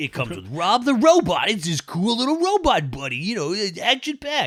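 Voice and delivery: put-on old-fashioned kids' toy commercial announcer voice. Explaining how a product was sold to boys, the speaker mimics an old toy commercial voice. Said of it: "hate how accurate that voice is to the time".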